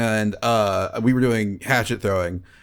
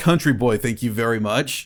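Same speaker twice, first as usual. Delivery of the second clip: normal talking voice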